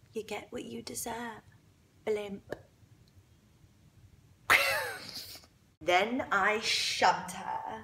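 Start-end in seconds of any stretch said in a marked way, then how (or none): 0.2-2.6 much softer, breathy, taunting whisper. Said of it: "I whisper into her ear".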